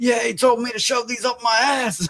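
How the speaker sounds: play-acted mad griping, high and angry. Retelling how a patient came out of the doctor's, imitating someone angrily complaining. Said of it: "came out of there mad bitching".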